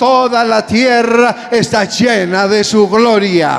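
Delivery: loud, strong, proclaiming delivery.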